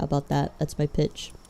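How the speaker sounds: plain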